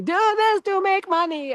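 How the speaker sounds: put-on high shouting.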